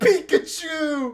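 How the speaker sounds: play-acted very high, loud, ecstatic shriek. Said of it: "so fucking happy about it".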